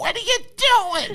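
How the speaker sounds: very high-pitched shrieking cry. Recalling a line repeated many times in their film: high-pitched voice. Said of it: "me in that high pitched voice saying that".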